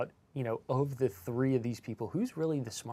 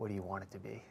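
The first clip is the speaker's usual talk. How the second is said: low, hushed, secretive half-whisper; 5 semitones lower, 9 dB quieter than usual. Telling a joke, acting out the accountant's reply to the question, half-whispering. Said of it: "And he whispers".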